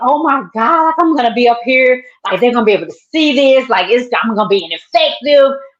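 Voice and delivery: all-out panic, freaking out. Retelling the moment the marker ink spilled: retelling own panic. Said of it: "I freaked out".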